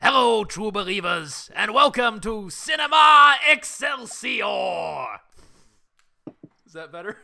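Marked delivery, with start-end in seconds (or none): 0.0-5.2 loud, very slow put-on voice, every word stretched out. Doing the big show intro at a cohost's request: Stan Lee voice. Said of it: "pronounce it as Stan Lee would pronounce it".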